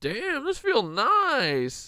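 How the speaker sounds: very slow, high, sing-song, swooping deer voice drawl. Voicing a deer lying in the road, speaking as the deer. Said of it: "his ears back like".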